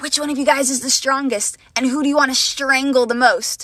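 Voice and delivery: put-on eerie, unsettling, creepy old woman's voice. Retelling how a stranger ran up to the speaker and friends; mimicking a creepy old lady. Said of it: "she asks in a really creepy voice".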